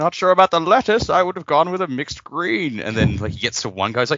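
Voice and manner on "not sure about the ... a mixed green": loud, very high-pitched villain voice. Retelling a YouTube dub of Bane reading lunch orders: Bane voice. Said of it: "someone doing an impression of his voice".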